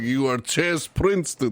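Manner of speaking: put-on thick Russian accent. Imitating a headmaster with a thick russian accent. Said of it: "this thick Russian accent guy".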